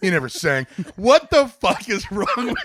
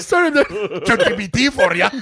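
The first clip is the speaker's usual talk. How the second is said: put-on mock-drunk man's voice, Scottish accent; 4 semitones higher than usual. Repeating another speaker's remark back, imitating a scottish drunk uncle. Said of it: "Fucking Scottish drunk uncle over here".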